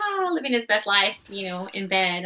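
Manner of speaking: normal talking voice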